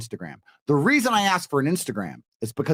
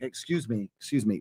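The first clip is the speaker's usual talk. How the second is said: cool, unhurried, relaxed, slow, soft-spoken; 4 semitones lower, 7 dB quieter than usual. A big guy showing how he gets people's attention: calm, slow, cool. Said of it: "get their attention in a very calm, slow, cool way".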